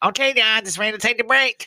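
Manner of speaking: shrill, very high, nasal whining voice. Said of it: "she has a real nasal voice".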